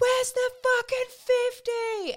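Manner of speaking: put-on, very high, shrill, drawn-out hollering cry. Retelling a shout heard from around the house during a close game: imitating someone yelling. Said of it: "I could hear the loudest going".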